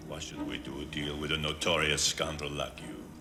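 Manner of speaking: put-on French accent. Playing an arms dealer in a film scene: bad French accent. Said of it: "with a bad French accent".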